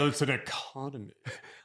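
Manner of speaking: soft, dismissive, mocking tone. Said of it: "trying to make it dismissive".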